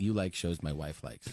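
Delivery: mock deflated, disappointed, let-down tone. Retelling how someone said a remark about shows: imitating a disappointed tone. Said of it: "he was disappointed".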